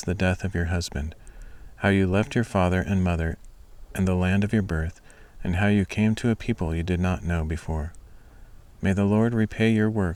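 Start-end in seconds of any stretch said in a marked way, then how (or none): none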